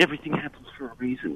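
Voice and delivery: normal talking voice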